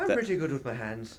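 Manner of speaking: put-on Irish accent. Voicing a character who volunteers to fight: Irish accent. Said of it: "that's Irish".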